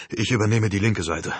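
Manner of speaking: ordinary delivery, nothing marked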